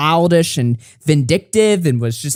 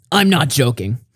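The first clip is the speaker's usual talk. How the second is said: put-on serious voice, lower; 3 semitones lower than usual. Reading out a message from Matt Pitt: serious voice for Matt Pitt. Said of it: "why am I doing a fucking serious voice for Matt?".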